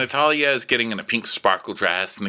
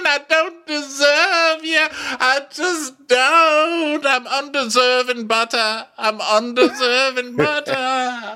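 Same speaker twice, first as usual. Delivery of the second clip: mock tearful pleading, higher pitch; 4 dB louder than usual. Retelling a recorded phone call where she apologizes: imitating someone crying. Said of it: "So she's crying and carrying on".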